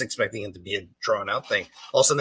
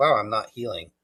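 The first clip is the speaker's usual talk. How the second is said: ordinary delivery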